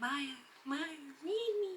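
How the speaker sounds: very quiet, high, hushed, eerie spooky calling. Imagining her unread books calling out to her in a video; spooky voice. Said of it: "in a really spooky voice".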